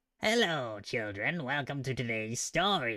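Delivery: creepy horror-host voice. Before a watch-along, greeting the listeners in a Crypt Keeper voice. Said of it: "The Crypt Keeper".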